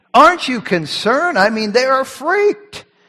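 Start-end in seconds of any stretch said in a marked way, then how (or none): 0.1-1.3 mock dry, half-sarcastic tone. Retelling the frightened disciples' words to the sleeping master: imitating an almost sarcastic tone. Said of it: "Almost sarcasm in their voices here".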